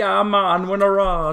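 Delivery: clumsy fake Jamaican accent. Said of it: "make their best attempt at doing a Jamaican accent".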